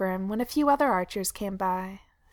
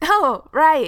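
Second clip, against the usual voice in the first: very loud, high exclaiming outcry; 6 semitones higher, 9 dB louder than usual. Keely answers the nervous archer who thinks he's seen him: crying out. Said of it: "Keely cried".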